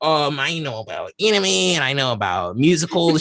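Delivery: mocking put-on voice. Retelling what Lauren said before the show: mocking imitation of Lauren. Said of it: "I don't appreciate the mocking tone".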